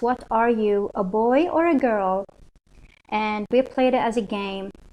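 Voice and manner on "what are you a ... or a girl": ordinary talk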